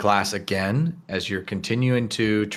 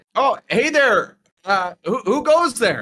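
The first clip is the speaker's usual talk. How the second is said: very high, loud shout; 13 semitones higher, 5 dB louder than usual. Voicing someone who spots a sneaking student: shouting from down the hallway. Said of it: "you hear somebody shout from back down the hallway".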